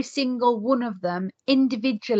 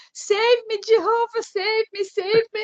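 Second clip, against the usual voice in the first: play-acted group of kids, high-pitched shouting; 11 semitones higher than usual. Recalling friends grabbing chairs as they were pulled out, imitating their shouting. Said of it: "my friends shouting".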